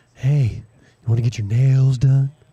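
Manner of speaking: provocative, seductive, slow, put-on sultry voice. Imitating a friend's advertisement voice: imitating Beth, put-on provocative voice. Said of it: "You're sounding all provocative".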